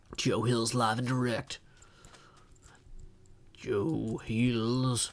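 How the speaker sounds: bad fake Texan accent. Announcing being live to the chat: bad Texan accent. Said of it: "This is my Texan accent".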